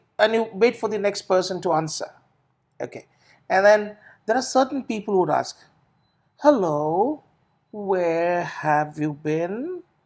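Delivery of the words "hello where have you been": very slow, deliberate, drawn-out delivery. Showing how certain people ask a question, slow question. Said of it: "That's slow".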